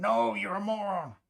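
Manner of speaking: play-acted, high, slow, stretched-out yell. Imagining someone in the chat room screaming at the mistake: imitating chat screaming. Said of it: "someone in the chat room screaming like".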